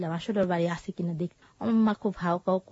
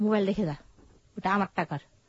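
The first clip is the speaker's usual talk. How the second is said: plain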